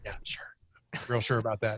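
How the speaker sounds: soft, unvoiced taunting whisper.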